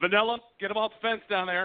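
gruff, high-pitched voice. Retelling an official's order from the control tower: gruff Bakke voice. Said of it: "gruff Bakke voice".

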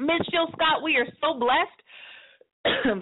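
overcome, choked up, voice catching mid-line. Radio host welcoming a guest on air: choked up. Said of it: "got myself all choked up".

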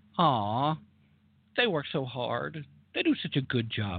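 gently, slightly sarcastic tone. Commenting on a quoted company statement, a little sarcastic. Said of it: "I'm being a little sarcastic in my tone".

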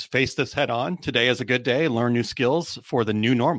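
usual speaking voice

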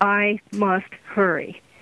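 flat, toneless monotone with no inflection at all. Speaker imitates a woman who spoke differently from them: flat, no inflection. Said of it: "no inflections on her words it was like".

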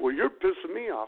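high, toned-down, mild yell. A cashier retelling a customer's demand for Captain Morgan, imitating him yelling. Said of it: "he's yelling".

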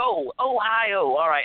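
pitched way up and dragged out. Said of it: "I sound like a bad [name] impression".

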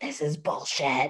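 breathy, hushed whisper under the breath. Retelling what the speaker muttered as a kid during prayers: imitating a past whisper. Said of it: "I would be whispering under my breath".

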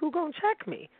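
soft, high-pitched voice. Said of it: "in my Sheree voice".

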